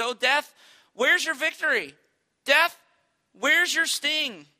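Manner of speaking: mocking, jeering, loud, high taunting delivery. Quoting Paul turning to death: imitating mockery. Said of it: "he begins to mock death".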